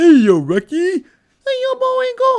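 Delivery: very high, loud, swooping, slow, drawn-out holler. Joking that the voice sounds like a cartoon: Bullwinkle voice. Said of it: "I almost sound like Bullwinkle right there".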